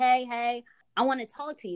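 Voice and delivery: easy, relaxed calling-out voice. Telling of a stranger who pulled over, the speaker quotes him: retelling a stranger's shout. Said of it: "he's like yelling out the car".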